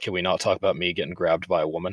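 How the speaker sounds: plain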